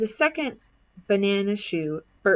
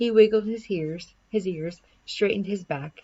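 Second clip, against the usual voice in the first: ordinary delivery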